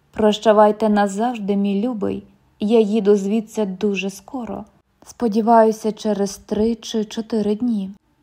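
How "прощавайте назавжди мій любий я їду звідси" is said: plain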